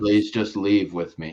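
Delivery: put-on tearful pleading tone. Retelling a girl begging her friend to leave the stage: imitating a tearful plea. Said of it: "with tears in her eyes starting to well up".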